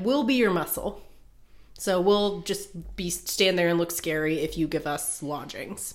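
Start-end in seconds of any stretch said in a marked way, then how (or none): none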